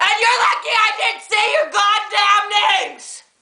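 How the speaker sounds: furious ranting tirade. A youtuber rants at people who came to the channel: furious ranting. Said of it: "I'm spinning because I'm so angry!".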